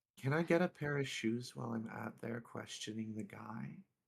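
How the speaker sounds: speaking in a whisper. Asking the squad about getting shoes during questioning, whispering. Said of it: "I'm just whispering to Squad Viper here".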